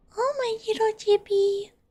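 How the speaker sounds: put-on high-pitched cooing baby voice.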